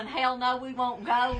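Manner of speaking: ordinary talk, nothing marked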